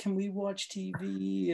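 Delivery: high, fake, sweet, cute little-kid voice. Retelling what he said to the old people there, put-on cute kid voice. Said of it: "puts on the cute kid voice".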